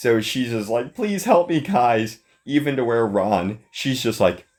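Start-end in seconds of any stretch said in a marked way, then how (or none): 0.9-2.2 play-acted high, tearful crying voice.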